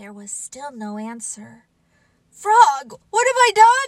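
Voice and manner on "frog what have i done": high, loud crying out. A toad on stage calls for his missing companion, getting no answer; crying out. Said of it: "cried Toad".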